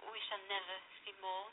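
ordinary delivery

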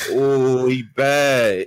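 motherly auntie voice, badly drawn out. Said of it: "you know when they talk with the hug".

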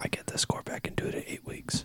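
speaking in a whisper. Answering when the test score comes back, whispering. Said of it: "Thank you for the whispering".

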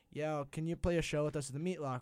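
ordinary talk, nothing marked

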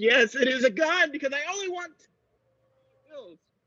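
very soft, high, nervous, cracking voice. A man demanding only certain bills confirms he holds a gun; voice cracking. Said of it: "your voice cracked a little bit".

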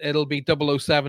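ordinary delivery

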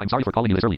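ordinary delivery

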